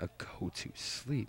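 soft, slow, sleepy voice. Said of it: "That was a go to sleep, by the way".

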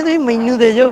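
ordinary delivery, nothing marked

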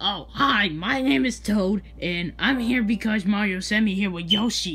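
grating, clownish character voice. Called on by another speaker, introducing yourself in character: annoying Toad voice. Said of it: "your voice is annoying".

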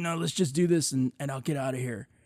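cocky, arrogant, dismissive, brushing-off insistent tone. Retelling a character refusing to rest: imitating arrogant insistence. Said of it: "arrogant as fuck".

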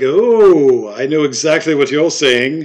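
sudden, loud, put-on English accent with long drawn "oh". Retelling what a man suddenly said to them: English accent. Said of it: "he's talking in an English accent all of a sudden".

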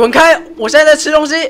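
gruff, high-pitched, loud shout.

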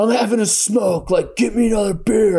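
loud shout, high pitch.

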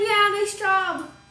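put-on yelling while laughing. Recounting working out on the beach as a guy drove by: retelling a laughing yell. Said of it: "laughing and like yelling at us like".

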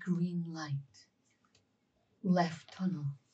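secretive, hushed, very soft half-whisper. Playing a character who quietly passes on directions: half-whispering. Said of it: "will obviously whisper it".

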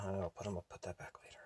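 low muttered aside.

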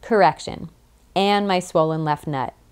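ordinary delivery

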